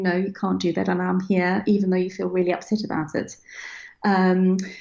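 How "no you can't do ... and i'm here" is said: ordinary talk, nothing marked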